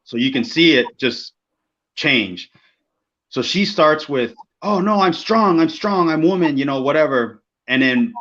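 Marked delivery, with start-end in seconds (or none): 4.7-6.6 put-on high, furious, stubborn, defiant tone. Retelling how a wrestler protested the planned finish: imitating someone angry. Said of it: "now she's fucking pissed".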